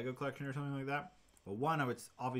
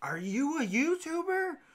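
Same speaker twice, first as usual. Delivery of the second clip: put-on high, loud, slow, curious kid voice, pitched way up. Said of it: "they're like".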